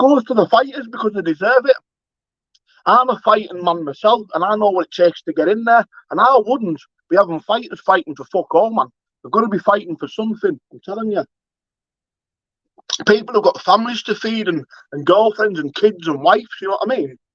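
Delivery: fired-up, impassioned, heated rant. Addressing the guys about his project: passionate rant. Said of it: "That was a that was a rant".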